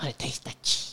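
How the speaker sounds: put-on little ghoul voice. Joking with friends, repeating a line in a little ghoul voice. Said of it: "sounds like some little ghoul".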